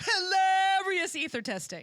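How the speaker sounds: high, loud, every word stressed as if in capitals. Reading an all-caps line aloud in Julie's voice. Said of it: "I'm gonna say this in Julie's voice 'cause it's all caps".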